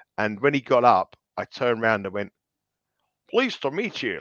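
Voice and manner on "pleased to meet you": put-on American accent, pitched up. Retelling greeting a man who sat beside him in a bunker, put-on American accent. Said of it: "like in an American accent".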